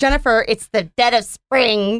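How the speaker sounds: mean-sounding put-on hummingbird character voice. Giving a hummingbird a voice for a joke: put-on hummingbird voice. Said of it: "Did you like that voice?".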